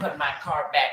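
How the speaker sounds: put-on flamboyant man's voice. Retelling a man who wanted attention asking for his car back, imitating a flamboyant man's voice. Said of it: "He was talking like that".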